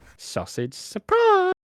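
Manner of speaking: very high-pitched voice. Showing how the character says her line: imitating Jean's delivery. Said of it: "he didn't say it like she says it".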